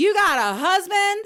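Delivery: put-on very high, loud, top-of-the-lungs child shriek. Retelling the daughter's interruption at the door: imitating a child screaming. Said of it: "my daughter screams at the top of her lungs".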